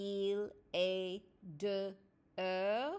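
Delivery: drawn out, slow, deliberate, word by word. Showing how the phrase sounds if said slowly: said slowly. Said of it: "If I said it slowly".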